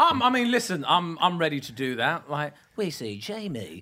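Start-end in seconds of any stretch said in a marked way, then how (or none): 2.8-3.8 TV voiceover narration delivery. Offering to narrate a reality show: Made in Chelsea voiceover voice. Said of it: "Made in Chelsea voiceover".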